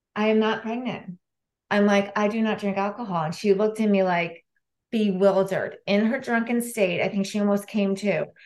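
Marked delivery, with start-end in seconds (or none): none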